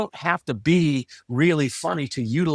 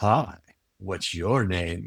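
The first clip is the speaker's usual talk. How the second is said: eerie, very slow, low, hushed creepy murmur; 6 semitones lower, 5 dB quieter than usual. Speaker showing how a changed greeting tone comes across, creepy tone. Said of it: "even more creepy".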